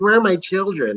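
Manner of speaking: high, mocking tone. Retelling a favourite line from the show: imitating Agatha mocking. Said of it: "Her mocking her was, like, so funny".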